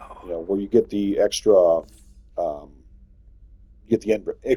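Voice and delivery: rushed, too-fast, stumbling ramble, tripping over words. Explaining monthly membership perks in the game, talking too fast. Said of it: "I'm talking too fast".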